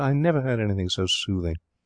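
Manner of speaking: plain reading voice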